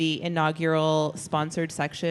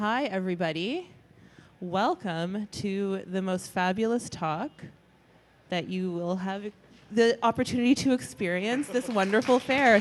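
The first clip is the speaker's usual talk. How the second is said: grand delivery that comes off sarcastic; 4 semitones higher than usual. Welcoming everybody to a talk at a fair: sounding sarcastic. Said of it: "I sound sarcastic".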